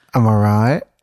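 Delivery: put-on sheepish voice. Imitating how another speaker just answered a greeting: imitating a sheepish reply. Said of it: "She kind of said, like".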